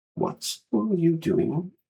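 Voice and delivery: very high-pitched woman's voice. Voicing Sister Willow catching the players outside the chambers: Sister Willow voice. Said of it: "This is Sister Willow talking".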